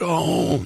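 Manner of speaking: whispery dying voice. Imitating how Biden says his one-word answer: whispery dying voice. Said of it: "That's sort of whispery, about to die".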